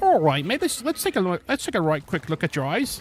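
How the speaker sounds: put-on heavy, thick English accent. Recalling an eye exam, imitating the eye doctor with a thick English accent. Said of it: "he had this like really thick like English accent".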